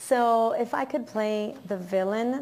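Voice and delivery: ordinary talk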